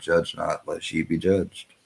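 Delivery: ordinary delivery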